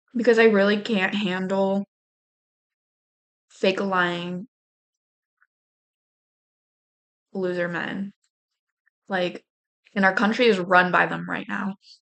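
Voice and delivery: furious, angry, fed-up voice. Venting about lying men before starting to read a book, angry. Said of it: "it's hard to think about anything when I'm this angry".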